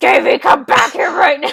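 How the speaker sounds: very loud, rough, aggressive yelled shout. Retelling an episode scene, imitating Witch's aggressive shout. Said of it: "He does sound rather aggressive".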